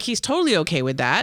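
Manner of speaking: normal talking voice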